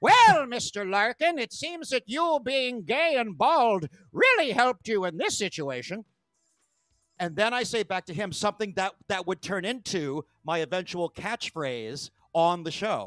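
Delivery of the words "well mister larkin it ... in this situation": poor, clumsy, put-on Irish brogue. Retelling a police encounter, the speaker quotes a cop: bad Irish accent. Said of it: "this cop has, by the way, a bad Irish accent".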